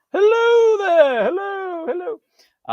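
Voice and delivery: very high, drawn-out funny little voice. Recalling a Seinfeld bit where a belly button talks: Seinfeld belly-button voice. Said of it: "give me a little funny voice like".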